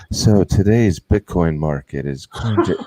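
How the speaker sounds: slow, put-on, sultry, sexy radio voice. Retelling how his voice practice came out, put-on sexy voice. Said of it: "that just turned into the sexy voice thing".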